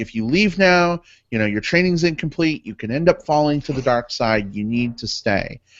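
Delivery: ordinary delivery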